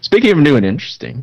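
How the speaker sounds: newscaster voice. Practicing a voice on a repeated line: put-on newsman voice. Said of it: "I'm practicing my newsman voice".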